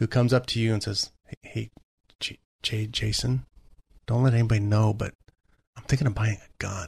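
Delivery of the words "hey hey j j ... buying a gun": hushed, secretive, nervous, stumbling stage whisper. Acting out a first-time buyer asking a trainer about a gun: imitating a nervous half-whisper. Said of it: "they probably have to whisper like that".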